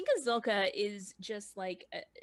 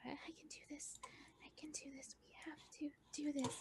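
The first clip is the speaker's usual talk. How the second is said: whispered mutter under the breath; 5 semitones higher, 14 dB quieter than usual. Acting out a woman talking to herself while driving, imitating someone muttering under breath. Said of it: "maybe she's muttering under her breath like".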